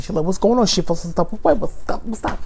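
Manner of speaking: mock New York accent, high.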